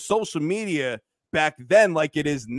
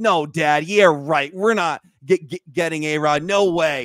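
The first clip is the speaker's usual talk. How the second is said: put-on kid voice, about twelve years old; 3 dB louder than usual. Retelling a phone call with his dad: imitating his twelve-year-old self. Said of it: "I like your twelve-year-old voice".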